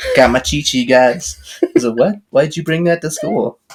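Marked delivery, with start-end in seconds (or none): 0.2-1.6 broad, deep, put-on Louisiana accent. Quoting a boy at school, deep Louisiana accent. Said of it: "the deep Louisiana accent".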